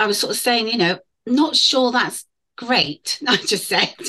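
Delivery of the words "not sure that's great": slow, sarcastic understatement. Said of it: "there was a big hint of sarcasm there".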